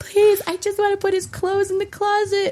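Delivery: mock tearful, pleading, very high crying voice. Retelling asking a mom for help after a baby's birth: imitating own past crying plea. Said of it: "having my mom come over crying".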